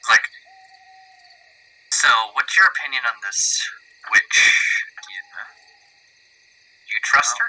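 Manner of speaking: hushed, soft whisper with no voice. Character speaks to Captain without waking the others, whispering. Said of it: "I'm gonna be whispering this".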